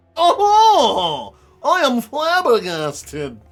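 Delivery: haughty rich man voice. Answering an accusation of an illicit relationship: snooty rich guy voice. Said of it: "I totally get into the snooty rich guy voice".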